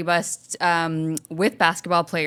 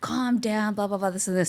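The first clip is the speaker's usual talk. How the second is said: put-on offhand, couldn't-care-less, super nonchalant, dismissive tone; 3 semitones higher, 4 dB quieter than usual. Retelling yelling at a man on the bus, quoting his reply, mock-nonchalant. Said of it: "super like nonchalant".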